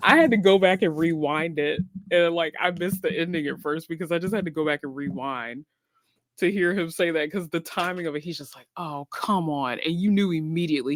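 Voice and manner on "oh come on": thoroughly disappointed, let-down exclamatory tone. Retelling a driver's reaction in the booth: imitating Blaney sounding disappointed. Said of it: "you could hear in Blaney's voice, like, how disappointed he was".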